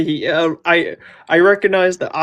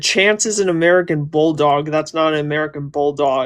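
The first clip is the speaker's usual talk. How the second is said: plain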